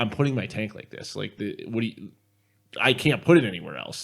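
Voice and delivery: mock mad, angry, worked-up arguing. Retelling how a player got mad about where he put his tank, imitating an angry player. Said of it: "And he got like so mad".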